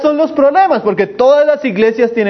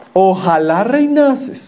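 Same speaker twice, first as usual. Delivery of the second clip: slow, sarcastic drawl with a laugh. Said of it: "les está hablando sarcásticamente".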